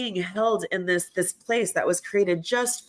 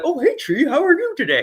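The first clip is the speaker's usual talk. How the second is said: playful, goofy put-on voice, high and loud; 9 semitones higher, 5 dB louder than usual. Retelling talking to a tree while hiking: silly put-on voice. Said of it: "I have all these voices like".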